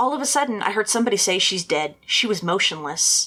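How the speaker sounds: ordinary talk, nothing marked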